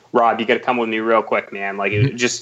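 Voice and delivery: ordinary talk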